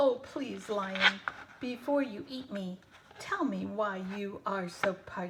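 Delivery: plain reading voice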